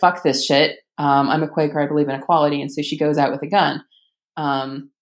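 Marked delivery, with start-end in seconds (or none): none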